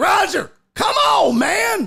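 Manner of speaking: mock hollered, high, drawn-out yell. Retelling an old guy yelling at the handler: imitating someone yelling.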